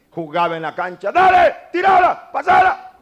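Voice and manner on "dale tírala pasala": screeching, very high, full-volume shouting. Speaker recalls playing basketball when younger, retelling shouting on the court. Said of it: "era un gritonazo de primera".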